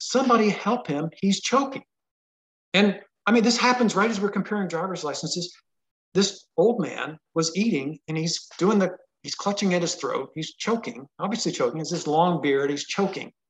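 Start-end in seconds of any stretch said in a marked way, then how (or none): 0.0-1.8 imitated woman shouting, pitched up. Retelling how a lady a table over called for help: imitating a lady shouting. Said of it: "this lady shouts out".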